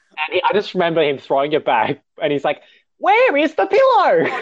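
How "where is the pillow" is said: put-on whiny, upset voice, much higher, slower. Remembering him throwing it back, the speaker imitates his whiny upset voice. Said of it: "You're kind of like this whiny kind of voice".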